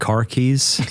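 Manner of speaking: "car keys" said in an American accent. Showing how his wife teases him, trying an American accent. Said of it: "I'll try to say it with an American accent".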